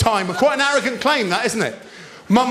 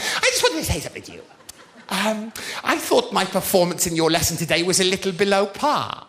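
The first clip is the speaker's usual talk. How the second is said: over-the-top, exaggerated eleven-year-old schoolgirl voice; 3 semitones lower, 3 dB quieter than usual. Speaker retells a pupil coming to talk after the lesson, eleven-year-old girl impression. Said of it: "You'll think I'm exaggerating this impression".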